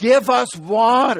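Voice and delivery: play-acted loud, blunt, demanding tone. Teaching scripture, the speaker acts out the people demanding from Moses: acting out a demand. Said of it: "They're now demanding from Moses".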